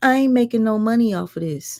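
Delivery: play-acted griping, complaining voice. Retelling what Kimmy says off camera: imitating someone complaining. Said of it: "she's complaining".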